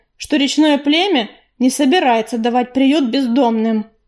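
ordinary delivery

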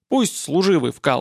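ordinary delivery, nothing marked

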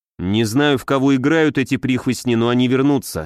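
plain reading voice

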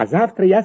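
ordinary delivery, nothing marked

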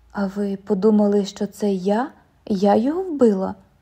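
ordinary delivery

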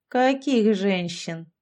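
sly, cunning smirking tone. A sorcerer answers a man demanding he release the women, sly smirking. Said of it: "колдун хитро ухмыльнулся".

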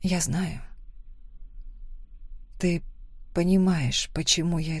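whispering. First-person narrator answers a friend after a cruel moment, whispered. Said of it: "прошептала я".

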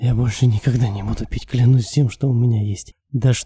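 plain reading voice

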